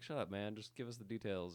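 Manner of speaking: ordinary talk, nothing marked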